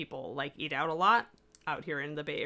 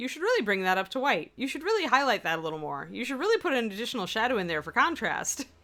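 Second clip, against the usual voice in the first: gently scolding, correcting, pitched-up admonishing tone; 6 semitones higher than usual. Imitating own voice as painters imagine it: imitating own admonishing voice. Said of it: "you should hear my voice admonishing you".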